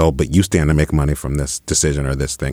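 ordinary delivery

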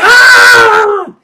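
high, loud, excited, frenzied scream.

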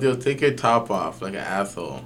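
plain

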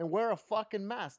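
put-on angry outburst. Retell how Bill Nye told people to wear a mask, in a mad Bill Nye impression. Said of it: "he's mad about it. He's like".

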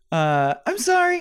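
odd, weird high-pitched put-on voice. Apologizing to the universe for taking up space, in a weird high-pitched voice. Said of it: "I'll get a weird high-pitched voice I do".

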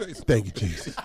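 fake heavy breathing, whispered and hushed. Acting out a reaction after being asked for it: put-on heavy breathing. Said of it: "Heavy breathing".

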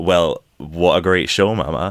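ordinary talk, nothing marked

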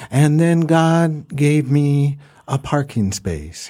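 soft, wondering drawling voice. Imitating a preacher's line about a parking space: Joel Osteen impression, soft drawl with wonder. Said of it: "He has this kinda soft drawl".

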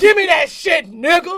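high-pitched, very loud, forceful, aggressive sexy voice. Showing the others how they talk during sex: aggressive bedroom talk. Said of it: "That's how I talk".

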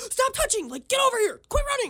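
play-acted yelling, very high-pitched, frantic. Retelling watching young boys near priceless artwork, acting out yelling at them. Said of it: "I'm yelling at them the entire time".

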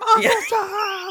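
mock panicked shout in a woman's voice. Picturing the woman in the balcony calling out: imitating a panicking woman. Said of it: "just panicking and being like".

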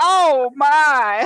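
high, loud put-on gasping squeal. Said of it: "he's always like".

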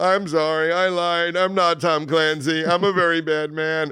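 tearful, high, very slow, drawn-out sobbing. Retelling a fake guest's confession in an interview: imitating someone crying. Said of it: "he would just start crying and go".

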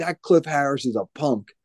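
mock heated, shouting outburst. Retelling how an uncle stood up shouting at the TV: imitating uncle shouting at the TV. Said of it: "shouting at the T V".

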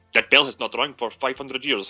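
put-on spoken with a Middle Eastern accent. Retelling what a man said about a bell, in a Middle Eastern accent. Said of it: "he's sounding Middle Eastern".

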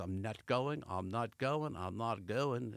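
put-on slow delivery in an English accent. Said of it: "I'm giving my English accent".

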